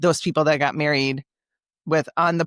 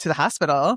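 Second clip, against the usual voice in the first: ordinary delivery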